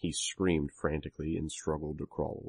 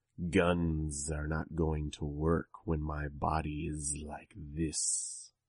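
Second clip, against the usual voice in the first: sibilant hiss on every word, inhuman voice; 4 dB quieter than usual. Narrator reads a character trying to sound less human, hissed inhuman voice. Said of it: "I hissed the words".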